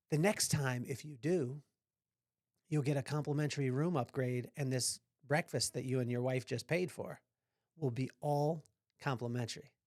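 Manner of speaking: hushed, low, secretive half-whisper. Retelling what a man leaned in and told him and his wife, retelling a secretive half-whisper. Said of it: "he leans in like he's a secret agent and he whispers".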